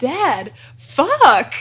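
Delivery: put-on loud, sing-song blurt like a two-year-old. Imitating a two-year-old boy looking up from his blocks at his dad: imitating Ollie's toddler voice. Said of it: "I think you should imitate the voice".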